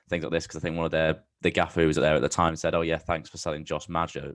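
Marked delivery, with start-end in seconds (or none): none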